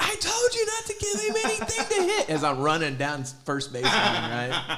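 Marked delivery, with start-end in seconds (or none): 0.0-2.3 shrill, very high screaming. Retelling running down the baseline, imitating someone screaming. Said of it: "finally screaming at that".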